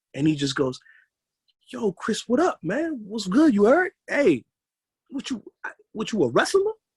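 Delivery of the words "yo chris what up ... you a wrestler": aggressive, pushy, very high, swooping. Retelling how a cousin asked about being a wrestler: imitating a cousin, aggressive. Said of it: "was so aggressive".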